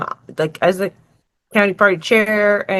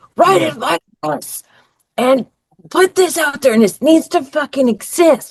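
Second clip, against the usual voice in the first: play-acted, all-out, high, heated ranting screams; 8 semitones higher, 3 dB louder than usual. Retelling screaming into the phone at a campaign manager about an ad, reenacting own screaming. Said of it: "And I'm screaming it".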